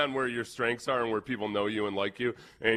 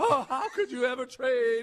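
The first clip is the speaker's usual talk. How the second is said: put-on Southern belle voice, pitched higher. Retelling how Rich Eisen reacted to a trade suggestion: Southern Belle voice. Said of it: "Southern Belle voice, paraphrasing what Eisen said".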